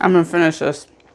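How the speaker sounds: talking with mouth full of food. Eating a peanut butter cookie while talking, talking with mouth full. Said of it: "talking with my mouth full".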